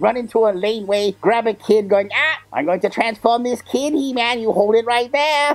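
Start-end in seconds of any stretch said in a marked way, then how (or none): 2.1-5.6 menacing, taunting cartoon villain voice. Retelling grabbing a kid as Skeletor: Skeletor threatening He-Man.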